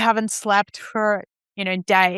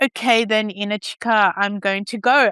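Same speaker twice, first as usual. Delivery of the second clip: ordinary talk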